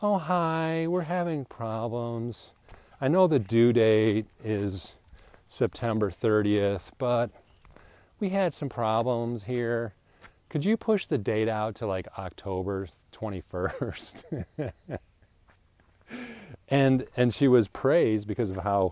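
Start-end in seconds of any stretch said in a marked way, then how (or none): 0.0-14.4 sweet, sugary phone voice. Recalling a woman at a former company dealing with customers, imitating a sweet phone voice. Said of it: "she was a sweet voice on the phone".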